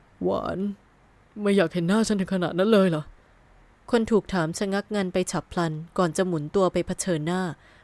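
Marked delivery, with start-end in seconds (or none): 0.2-3.0 shaky-voiced moan. Someone who overheard the whole conversation asks a question, moaning in a trembling voice. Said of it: "ครางถามเสียงสั่น".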